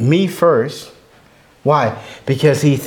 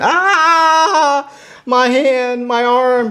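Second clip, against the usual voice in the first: put-on shrill, very high, very slow scream of agony; 11 semitones higher than usual. Retelling how a pastor with a broken arm screamed: imitating someone screaming in pain. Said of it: "He's screaming".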